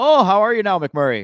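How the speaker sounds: put-on loud, high Canadian accent like a tv character. Quoting a show's often repeated line, the speaker does a Canadian accent. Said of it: "were you doing like a Canadian accent there?".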